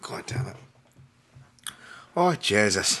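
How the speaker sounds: strained voice slipping into an Irish accent. Struggling with hiccups, the speaker swears, lapsing into an Irish accent under duress. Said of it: "I don't know why I go to Irish accent whenever I'm in duress".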